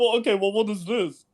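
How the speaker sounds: ordinary talk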